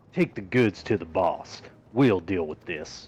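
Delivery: put-on Texan drawl. Voicing a thug in a game scene: Texan accent. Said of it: "these people all sound Texan".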